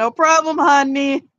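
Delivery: sweet shouted call. Andreas answers a thank-you yelled from the back, yelling back. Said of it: "Andreas yells out".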